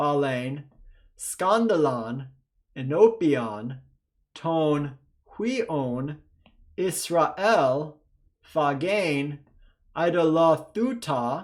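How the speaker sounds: unhurried, careful reading aloud. Teacher leads viewers in a first read-through of the passage, reading slowly. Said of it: "let's go ahead and read slowly together".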